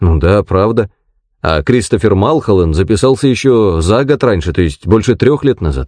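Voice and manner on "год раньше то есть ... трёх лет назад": ordinary delivery, nothing marked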